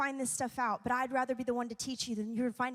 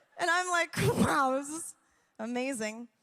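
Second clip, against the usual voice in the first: ordinary talk, nothing marked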